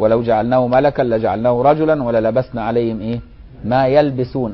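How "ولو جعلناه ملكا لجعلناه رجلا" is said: usual speaking voice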